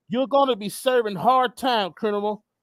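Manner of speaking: usual speaking voice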